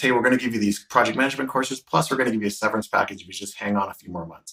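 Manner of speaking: usual speaking voice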